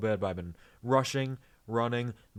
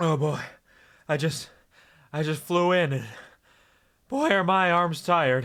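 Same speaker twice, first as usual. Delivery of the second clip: loud, pitched-up, winded, out of breath; 6 semitones higher, 8 dB louder than usual. Opening the variety show as host, the speaker arrives out of breath. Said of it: "Let me catch my breath".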